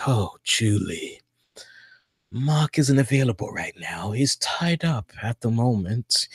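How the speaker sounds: very quiet, low, soft, sinister, creepy voice. A woman calls her boyfriend and gets Anthony Hopkins: Anthony Hopkins Silence of the Lambs vibe. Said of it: "a Silence of the Lamb type of vibe".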